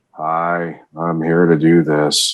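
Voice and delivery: low, slow, flat deadpan monotone. Talking about a favorite character and his deadpan style, deadpan Cronus voice. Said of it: "I love how deadpan he is".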